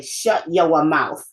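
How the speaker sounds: put-on slow, drawn-out New England accent. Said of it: "That New England accent was always there".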